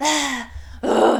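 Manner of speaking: slow, loud, impatient, exasperated groan.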